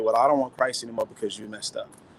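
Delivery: ordinary talk, nothing marked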